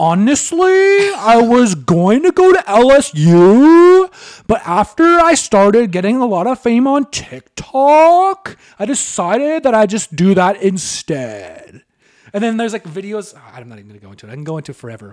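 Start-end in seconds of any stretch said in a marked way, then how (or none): 0.0-11.8 very slow, raised, pitched-up drawl, "U" stretched longest. Imitating how Dixie talks: imitating Dixie's super deep voice. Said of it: "this is exactly how she talks".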